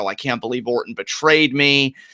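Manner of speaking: ordinary talk, nothing marked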